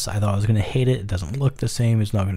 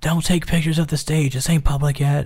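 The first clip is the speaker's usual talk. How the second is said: high, shouted, called across; 6 semitones higher than usual. Recounting taking stage photos at T-Mobile Arena, the speaker imitates someone shouting. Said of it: "We hear a voice shouting".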